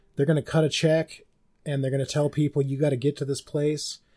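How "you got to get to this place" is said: ordinary talk, nothing marked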